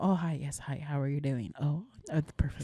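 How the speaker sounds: polite, soft, low phone-receptionist voice. Describing how her partner talks on work phone calls, in a secretary voice. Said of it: "Secretary voice".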